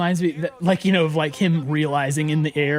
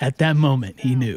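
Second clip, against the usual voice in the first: put-on voiceover narrator delivery; 3 semitones lower than usual. Commenting on a player realizing he had made a mistake: narrator voice. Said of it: "you had the narrator voice".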